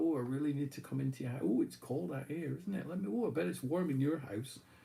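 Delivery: put-on insistent, pushy old woman voice. Retelling a film scene where an old woman asks to come in: imitating a pushy old woman. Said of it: "really pushy, and she's like".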